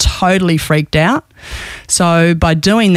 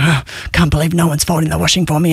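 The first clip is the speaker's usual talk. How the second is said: put-on grumpy grunting and grumbling. A parent acts out their past self coming home, retelling own grumpy grunting. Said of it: "I'd be just grunting".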